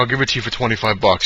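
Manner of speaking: plain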